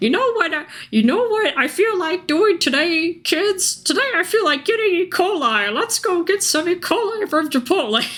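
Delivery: put-on very high old-lady character voice. Riffing on camera, speaker addresses 'kids' in a put-on grandmother voice. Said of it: "I don't know if I was a grandmother".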